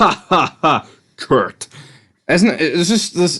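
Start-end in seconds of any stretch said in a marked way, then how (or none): 0.0-1.7 put-on sarcastic wrestler voice. Retelling a wrestler's promo to another speaker: sarcastic Chris Benoit impression. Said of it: "every promo he does is, like, sarcastic. He's like".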